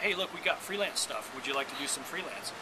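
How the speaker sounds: normal talking voice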